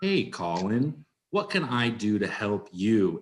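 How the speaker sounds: put-on slow, really calm tone. Retelling how a production manager spoke to a stressed young tour manager, imitating a really calm tone. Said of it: "spoke in this really calm tone".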